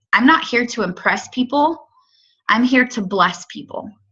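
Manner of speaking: ordinary talk, nothing marked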